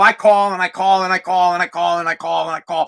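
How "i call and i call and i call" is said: ordinary talk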